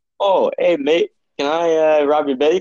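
put-on Canadian accent. Joking about canadian robbers asking to rob a bank: put-on canadian accent. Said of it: "I don't think that's a Canadian accent".

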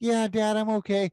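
put-on little, tiny, small child's voice. Retelling hearing a kid at the next urinal answer his dad, little tiny kid voice. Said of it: "I hear a little tiny voice".

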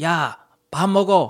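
curt, rude, barked yell. Describing Korean parents who scream at their kids: imitating a parent's rude yell. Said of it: "they're always screaming at me".

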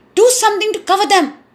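impatient, urgent, very high pitch. A king speaks to his horrified barber: impatient. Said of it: "said the king impatiently".

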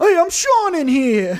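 bad New York accent, high and loud. Playing a character named Sean in a bit, Sean's New York accent. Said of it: "Sean sounds like he's from New York".

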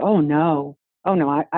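ordinary talk, nothing marked

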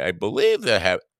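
voice jumping up high. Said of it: "high pitch in my voice".

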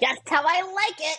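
squeaky put-on giant rat voice. Playing a scene with the giant rats Champ and Bestie, in a rat voice. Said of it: "It's a rat voice".

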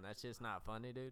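ordinary delivery

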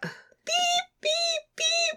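very high, soft error beeping sounds. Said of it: "the invalid noise".

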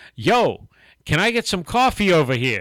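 put-on terrible Jersey accent. Retelling a restaurant customer's shout for coffee: bad North Jersey accent. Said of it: "my accent is terrible".

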